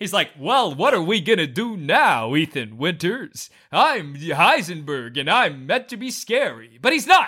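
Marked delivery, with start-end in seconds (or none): 0.4-6.8 cool-guy voice in anime style. Complaining about a game villain he hates, doing Heisenberg's anime cool-guy voice. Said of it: "somebody doing an anime cool guy voice".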